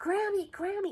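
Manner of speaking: put-on very high little-kid shout. Grandmother retells her grandchild calling her from the bathroom, imitating a loud call. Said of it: "in loud voice".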